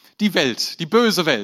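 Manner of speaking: cynical, sarcastic, mocking, ironic lament. Showing how some Christians treat the phrase, in a mocking, ironic tone. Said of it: "ein bisschen zynisch, ironisch betrachtet werden. So, oh, ... Schon allein die Betonung".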